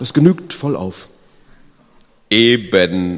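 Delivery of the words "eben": laughing out loud. The unaccommodating man answers the man he maimed, laughing loudly. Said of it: "lachte der Unumgängliche schallend".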